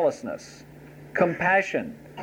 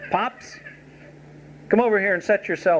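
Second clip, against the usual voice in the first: proud, callous, exaggerated, swooping, rude bossy swagger; 4 semitones higher than usual. Exaggerating how a son might rudely confront his father: mock-proud, rude confrontation. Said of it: "if Jonathan had been proud and rude and callous".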